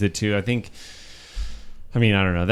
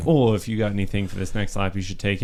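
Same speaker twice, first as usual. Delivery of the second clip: ordinary talk, nothing marked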